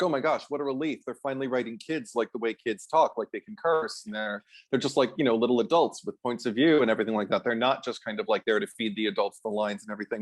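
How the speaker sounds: normal talking voice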